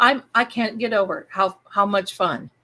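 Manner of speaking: normal talking voice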